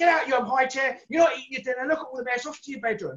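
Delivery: play-acted, high, shouting-down voice. Describing a toddler making a mess in a high chair, imitating a shouting parent. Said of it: "shouting and screaming at the kid".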